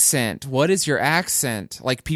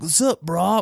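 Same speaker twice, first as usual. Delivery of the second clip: douchey California surfer-bro voice; 3 semitones higher than usual. Describing how one thought one's voice sounded: douchey California surfer voice. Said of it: "douchey surfer, like, from California".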